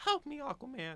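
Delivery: very high, desperate put-on woman's voice. Describing a Family Guy scene, voicing a woman on the beach: put-on woman's voice. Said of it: "I regret doing that voice".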